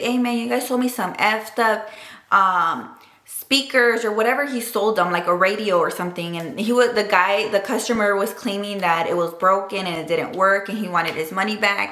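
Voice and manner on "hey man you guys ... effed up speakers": usual speaking voice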